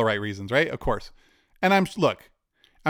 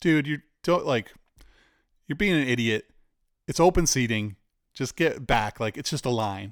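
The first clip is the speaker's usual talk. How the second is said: ordinary talk, nothing marked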